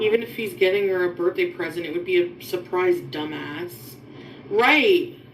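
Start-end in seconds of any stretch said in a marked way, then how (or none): 3.0-3.7 strong stress punched onto dumbass. Commenting on a video about a birthday present: stress on DUMBASS. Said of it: "Emphasis on the dumbass".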